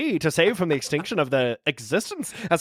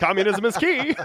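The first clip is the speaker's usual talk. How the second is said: put-on high-pitched, old-time comic character voice; 5 semitones higher than usual. Joking that Karl Marx talks like the comedian: Groucho Marx voice. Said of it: "But they both still talk like this".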